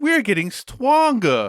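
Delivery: put-on high, swooping, babyish small-child voice. Imitating a game character's voice acting: imitating baby talk. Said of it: "that's the way she talks the entire game".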